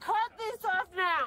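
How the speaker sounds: yelling. Shouting repeated demands at people who tell them to go back inside, yelling. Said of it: "You are yelling at the wrong man".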